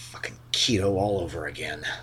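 quiet, slow muttering. The game master voices a character as the party walks toward the elevators: muttering under breath. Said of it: "you hear Barden mutter under his breath".

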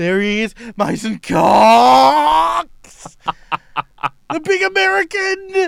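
very high, very loud, slow, emphatic commentator call. Showing another speaker how to call the goal: emphatic sports commentary call. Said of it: "you gotta emphasise the words".

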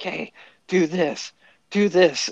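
yelling, shouting. Telling how their dad yelled at Scott from the corner, imitating dad yelling. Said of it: "my dad's like yelling at him".

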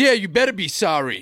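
mock annoyed, angry, scolding tone. Speaker retells a man upset about a grasshopper in the salad, retelling an angry man. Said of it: "He starts getting all angry and pissed off".

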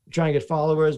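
ordinary delivery

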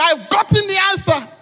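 very high shrieked scream. Retelling the moment of seeing the code's result: retelling own scream. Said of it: "I screamed".

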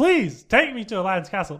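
put-on little-kid voice, pleading. Retelling a childhood story, imitating his three-year-old self pleading with Mom. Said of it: "I'm pleading with her".

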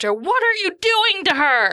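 shrieking, swooping scream, pitched very high. Playing a character who screams at a doctor: screaming at the doctor. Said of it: "And I'm now screaming at the doctor".

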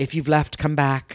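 put-on British accent. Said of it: "He has a British accent".

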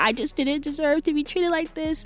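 put-on weepy, high, tearful crying voice. Retelling an interview where Nene Leakes cried: imitating Nene Leakes crying. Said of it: "she's just crying".

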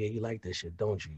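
very quiet, hushed half-whisper, right up close. Showing what they say during sex: half-whispering in someone's ear. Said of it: "I'm whispering in your ear".

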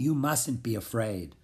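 usual speaking voice

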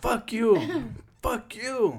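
mock yelling. Retelling someone quitting a job and cursing: imitating someone yelling. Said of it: "so he yells at him".

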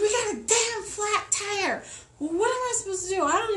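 very high, accusing, blaming shout. Retelling a phone call about a flat tire; retelling a blaming yell. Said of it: "I start yelling at him like it's his fault".

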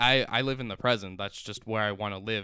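ordinary talk, nothing marked

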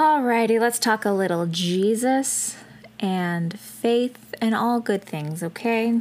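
calm, soothing tone with Jesus drawn out. Starting a new segment, trying to use a nice soothing voice. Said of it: "I was trying to have like a nice soothing voice".

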